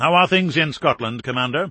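plain

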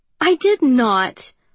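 fake anger. Avery denies what Atlas teasingly remembers about her, in mock anger. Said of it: "glare at him in mock anger".

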